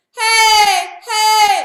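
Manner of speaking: high chest voice, belted. Showing a learner the high upper chest belting voice. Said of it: "That's really that sound".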